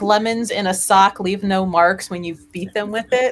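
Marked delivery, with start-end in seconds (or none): none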